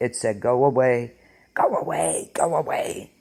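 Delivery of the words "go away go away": very slow, hissed creature voice. Reading out a witness's account, quoting what the creature said, in a hissing Gollum voice. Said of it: "in a hissing voice".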